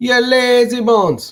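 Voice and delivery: high, put-on, reggae-flavored Jamaican accent. Speaker recalls what he'd say to a viewer who loved it, Jamaican accent. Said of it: "the Jamaican accent".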